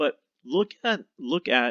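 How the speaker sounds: voice breaking and cracking mid-phrase. Commentator breaks down a pass in a football match, voice cracking. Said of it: "I think my voice just cracked".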